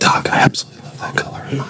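whispered voice. Answering being yelled at with a compliment instead, whispering it. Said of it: "I'm gonna just start whispering compliments".

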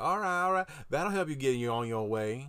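imitated Louisiana accent. Retelling what a man with a distinct local accent said to them, Louisiana accent. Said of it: "sounds like a Louisiana accent".

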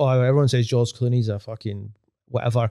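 usual speaking voice

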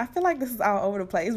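very fast, nervous, excited rushed talking.

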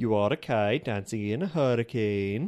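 attempted Swedish accent. Doing an accent for another player to guess: attempted Swedish accent.

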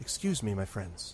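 gentle, quiet voice. Narrating a game scene, a voice speaks behind the players, gentle quiet voice. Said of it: "sort of a gentle, quiet voice".

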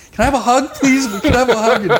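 put-on very high, tearful, crying pleading tone. Speaker retelling what their mom said to them, imitating mom crying. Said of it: "she was like crying".

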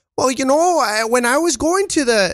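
Irish-sounding impression. Someone asks you to do your JP; give a JP impression that sounds Irish. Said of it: "Why are you Irish?".

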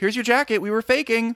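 high mock-sheepish voice.

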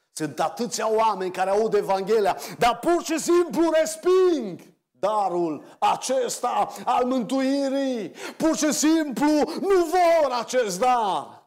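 pressing, heavy-hearted, emphatic and sorrowful delivery. A speaker addresses listeners tonight about rejecting the gift, with emphasis and sadness. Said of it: "o spun cu apăsare și cu tristețe".

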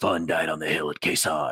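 gruff, deep, hard-edged voice. Recalling a line from a comedy sketch: imitating a gruff voice. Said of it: "the gruff voice".

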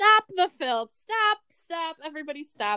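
high-pitched, loud yelling. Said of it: "Francis Ford Coppola yells".

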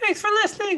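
put-on Italian accent, very high and booming. Signing off the podcast: put-on Italian accent. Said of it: "that was my Italian".

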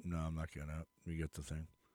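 very low, very quiet, flat deadpan monotone drone. Retelling how a man refused to leave his SUV, the speaker imitates his monotone. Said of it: "he probably was still monotone about it".

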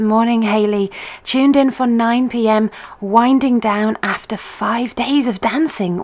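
ordinary talk

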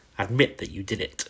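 plain

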